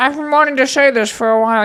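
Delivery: put-on polished, sophisticated British accent. Retelling a movie's ending, quoting the man's proposal, sophisticated British accent. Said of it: "He's a really sophisticated British accent".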